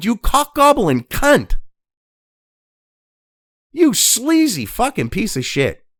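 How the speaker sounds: New England Boston accent. Cursing at someone, in a Boston accent. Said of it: "I'm talking like I'm from fucking Boston".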